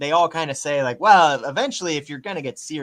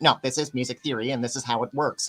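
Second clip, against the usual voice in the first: deliberate put-on voice with snide, shade-throwing attitude; 5 dB quieter than usual. Throwing shade while explaining music theory: Ben Shapiro voice. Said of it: "I'm doing the Ben Shapiro voice on purpose".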